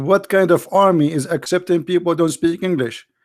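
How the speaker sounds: put-on screaming drill sergeant voice. Retelling how the army sergeant screamed at him: imitating a sergeant screaming. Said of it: "the sergeant was screaming at me".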